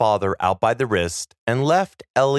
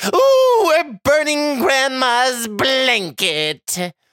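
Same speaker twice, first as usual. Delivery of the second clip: very high-pitched, delighted, gleeful shriek; 13 semitones higher, 3 dB louder than usual. The creature, running laughing toward the hallway, lets out a gleeful scream. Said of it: "Gleefully, it screamed".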